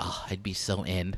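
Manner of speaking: very soft, low, hushed, nerdy little voice. Retelling how Jen reacted to a Nightwing drawing, imitating Jen as a geek. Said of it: "Why'd you make her sound like a geek?".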